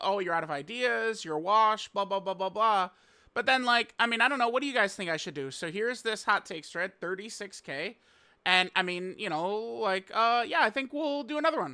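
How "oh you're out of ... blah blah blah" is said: put-on whiny, complaining, griping voice. Imitating viewers who complain about hot takes videos: imitating whining commenters. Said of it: "they're crying".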